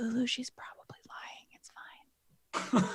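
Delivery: slow, breathy, hushed reassuring whisper. Reassuring a confused Lulu in a game scene: whispering to Lulu. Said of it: "I whisper to her".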